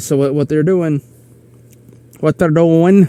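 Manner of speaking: slight Midwestern accent slipping out. Speaker explaining what's being done at their venue, with a slight Midwest accent. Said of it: "A little bit of my uh, Midwest coming out".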